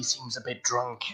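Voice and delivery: quiet put-on whisper. Speaking in character to a carriage driver, whispering. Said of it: "I kinda whisper to him".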